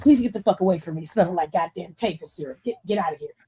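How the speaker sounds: put-on cranky, fed-up, low irritable grumble. Speaker acts out how he reacts to the smell of syrup, imitating an irritable complaint. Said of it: "he gets really irritable".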